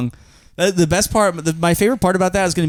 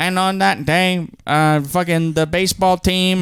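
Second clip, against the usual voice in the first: put-on old-time fifties radio voice. Joking about talking like old radio: 1950s radio voice. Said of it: "I should be talking in a nineteen fifties radio voice".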